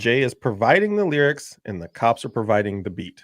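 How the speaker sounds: ordinary talk, nothing marked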